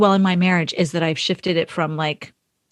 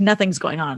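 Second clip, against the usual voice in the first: normal talking voice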